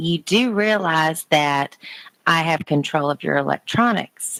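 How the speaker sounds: ordinary talk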